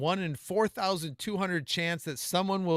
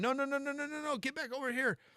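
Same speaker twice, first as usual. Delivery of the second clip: mock crowd screaming, very high-pitched and frantic; 10 semitones higher, 6 dB quieter than usual. Retelling how people yelled at a runner going the wrong way: imitating people screaming. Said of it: "people were screaming at him".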